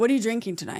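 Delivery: suspicious, accusing, accusatory interrogating tone. Teaching how to ask about drinks, showing the wrong way: flat accusatory monotone. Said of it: "I'm not monotone".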